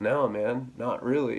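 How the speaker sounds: slow, teary, snuffling crying, acted out. Recounting crying to a man about a toxic relationship, retelling own sniffly crying. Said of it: "it's like the dude from Winnie the Pooh, Eeyore".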